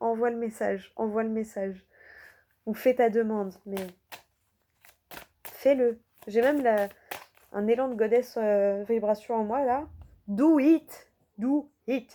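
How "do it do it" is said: put-on English accent, drawn out, very slow. Urging a listener to send her message, in an English accent. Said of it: "avec mon accent anglais là".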